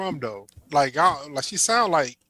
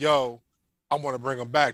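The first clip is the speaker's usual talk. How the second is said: ordinary delivery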